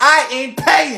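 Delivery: stubborn, defiant mild shout. Told to lower their voice, the character keeps shouting. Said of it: "I'ma shout all I want to".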